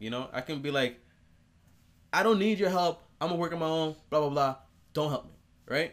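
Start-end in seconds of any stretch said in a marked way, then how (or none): 2.1-5.3 loud, high, angry, heated outburst. Showing different ways to say something, this one: angry tone. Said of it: "That's an angry way to say it".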